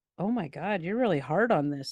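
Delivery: plain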